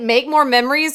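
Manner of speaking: put-on, very smug, self-satisfied delivery. Retelling what a security guard said, imitating a smug guard. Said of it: "with the most smug attitude I ever heard".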